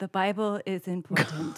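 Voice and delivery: mock robotic voice. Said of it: "you were robot [name]".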